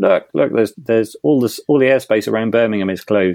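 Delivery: normal talking voice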